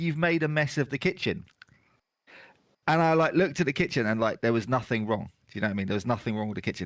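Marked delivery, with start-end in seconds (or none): none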